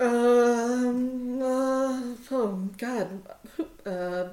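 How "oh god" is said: plain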